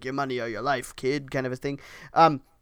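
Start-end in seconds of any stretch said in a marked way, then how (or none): 0.0-1.3 rough gravelly voice, lower and quieter. Describing a mugging in the park, quoting the mugger: gravelly mugger voice. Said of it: "talking in this gravelly voice like".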